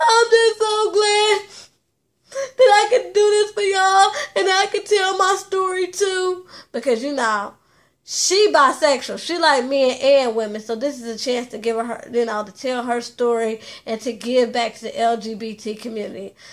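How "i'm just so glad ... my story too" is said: high, tearful, crying delivery. Retelling what a cast member said at an event, imitating someone crying. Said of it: "she started, like, crying, like".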